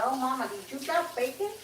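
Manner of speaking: high-pitched voice of a little talking dog. Voicing the dog, who smells bacon cooking: voicing Lucy the dog. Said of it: "She says".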